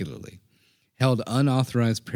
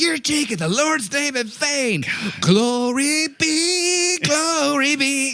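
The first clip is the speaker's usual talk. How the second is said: mock drill sergeant yell, much higher, much slower; 6 dB louder than usual. Speaker describes how the drill sergeant would yell at him: imitating a drill sergeant yelling. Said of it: "just step up and just yell at him".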